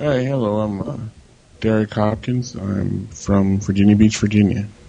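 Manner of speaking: very low, half-asleep, drowsy voice. A caller gives his name and hometown when the host asks, sleepy. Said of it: "sounds sleepy".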